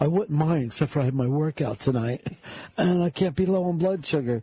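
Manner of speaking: put-on voice on the verge of tears. Retelling what Fez said, imitating Fez almost crying. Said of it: "he almost starts crying, and he goes like this".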